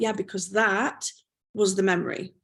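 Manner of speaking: ordinary talk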